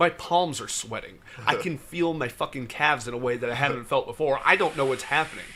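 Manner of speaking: ordinary delivery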